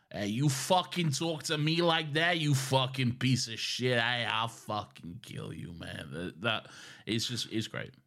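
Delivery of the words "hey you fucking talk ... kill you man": put-on broad, threatening New York street accent. Talking about how much they love it, speaker demonstrates a New York accent. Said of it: "I love the New York accent so much".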